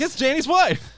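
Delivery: high, loud mocking voice. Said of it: "and they're like".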